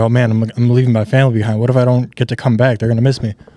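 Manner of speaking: frightened, spiralling, panicky, stumbling fretting, acted out. Retelling a trip that turned frightening: retelling own panicked words. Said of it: "I started panicking. I was like".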